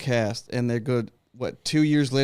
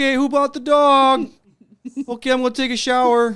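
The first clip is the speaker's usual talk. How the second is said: put-on nerdy character voice, higher and louder; 13 semitones higher, 6 dB louder than usual. Doing movie impressions for the others: Rick Moranis impression. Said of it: "great Rick Moranis from Ghostbusters impression".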